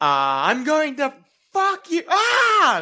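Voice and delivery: high-pitched screaming mage voice.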